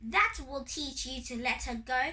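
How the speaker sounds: ordinary delivery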